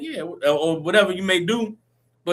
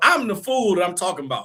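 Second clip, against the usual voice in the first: plain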